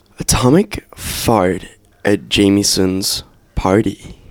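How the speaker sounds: put-on American accent. Standing up at the mic to deliver a line: American accent. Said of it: "you did that in an American accent".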